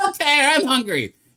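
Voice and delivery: put-on very high, drawn-out toddler tantrum whine. Mocking demands for game changes by voicing a toddler: mock toddler temper tantrum. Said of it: "a toddler with a temper tantrum".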